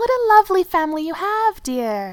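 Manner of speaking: high, sweet cooing voice. A woman speaks to Thorin about his family, cooing. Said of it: "she cooed".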